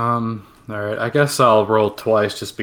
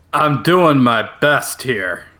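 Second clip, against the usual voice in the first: shouty, lightly played, stagey mild shout. Told to keep quiet while the group sneaks along, a character answers: loud. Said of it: "He says loudly".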